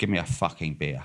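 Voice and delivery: put-on low, hushed, very posh upper-class English accent. Retelling a man at the bar ordering from the barman in English, very posh accent. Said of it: "in a very posh accent".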